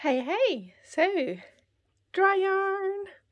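out of breath, panting, very high pitch, very slow. Back after running up the stairs, the host greets viewers: out of breath. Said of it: "I've just ran up the stairs and I can't breathe".

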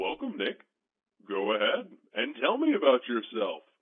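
put-on talking puppet character voice. Welcoming nick and asking him to talk about himself, puppet voice. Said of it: "Now the puppet voice".

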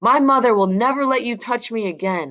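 high-pitched shout, hard and sharp. Scrambling onto a bed, the narrator shouts at the man who swung at him. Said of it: "I shouted".

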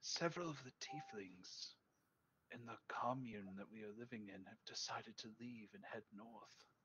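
hushed whisper. Voicing a character who lowers his voice to another character: whispering. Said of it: "he kinda lowers his voice and actually whispers to you".

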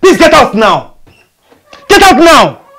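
shouting. A son orders the maid out of his room, shouting. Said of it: "Why are you shouting?".

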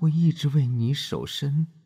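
tender, doting, loving tone in a very high voice. Narrator reads a man's line after the door closes, spoken to the narrator: voice full of love. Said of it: "他用充满爱意的声音继续说".

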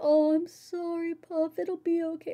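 put-on soft, comforting voice. Retelling how a friend comforted them while crying: soft voice imitating Civ. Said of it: "Civ's was very soft and like".

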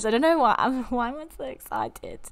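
high-pitched, giddy laughing, so hard tears come. Reading out a challenge's optional side quest: laughing to tears. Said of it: "I've literally got tears in my eyes".

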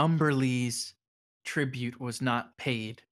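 ominous, menacing, eerie voice. As the wind picks up, the storyteller voices it: fell voice on the wind. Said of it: "the wind sort of picks up more and it says".

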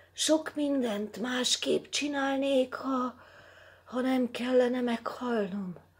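feeble, weak, breathless, panting, very high voice. Bruns speaks to the other cursed men: panting, weak voice. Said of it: "lihegte gyenge hanggal Bruns".

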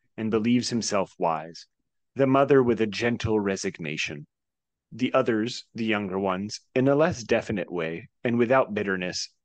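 plain

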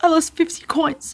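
put-on trembling, shaky, high little boy's voice. Narrating a boy who lost his money answering the rabbi, in a shaky voice. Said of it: "answered the boy in a shaky voice".

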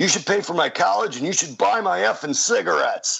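mock, very high-pitched yelling. Retelling how a protester yelled at him outside: imitating someone yelling. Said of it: "yells to me".

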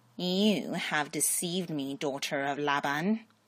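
demon voice, hissed out. Reading a story, the narrator voices a demon speaking from the ground, hissing demon voice. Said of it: "the demon hissed".

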